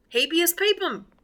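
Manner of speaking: put-on Texas accent, pitched high. Joking after an american pope is announced, latin in a texas accent. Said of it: "How do you like that with my Texas accent?".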